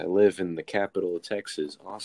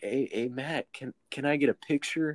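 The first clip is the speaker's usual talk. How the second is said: put-on shaky starstruck voice, higher, slower; 6 semitones higher than usual. Recalling asking matt for a picture while starstruck, acting out own shaky voice. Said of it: "My voice is shaky".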